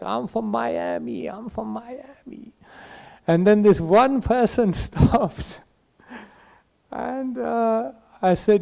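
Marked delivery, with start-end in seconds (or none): 0.0-2.5 fake American accent, soft, half-whispered. Monk retelling how he tried to get people to stop, put-on American accent. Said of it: "so I started doing American accents".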